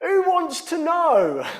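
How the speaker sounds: very loud, very high, drawn-out yell. Retelling how Ollie shouted back at a woman's question: imitating Ollie shouting back. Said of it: "Ollie shouts back".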